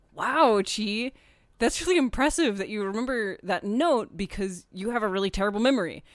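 normal talking voice

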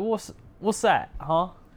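put-on English accent. Explaining which accent you were attempting to puzzled listeners, trying a James Corden voice. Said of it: "trying to envision James Corden in my head".

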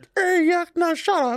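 pointed, mocking caricature voice, very high. Retelling the downstairs neighbor's reply to his yelling, impersonating the downstairs neighbor.

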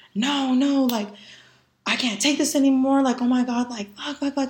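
put-on, muted, anguished screaming outcry. Retelling a vision of her younger self sitting there: imitating her younger self screaming. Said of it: "sitting there screaming".

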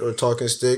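usual speaking voice

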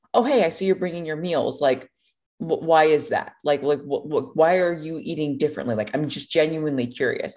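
ordinary delivery

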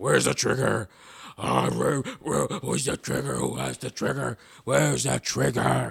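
very loud, gruff, rough yell. Retelling a movie scene where Batman beats up Bane: gruff Batman voice. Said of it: "people think Batman's voice has to sound like that".

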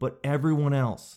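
normal talking voice

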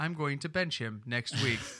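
robotic, synthetic, computer-like machine voice. Recalling a broadcast's BS translator, speaker does its robotic computer voice. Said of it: "You'd hear a computer voice go".

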